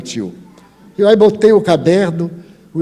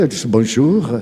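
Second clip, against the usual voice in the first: plain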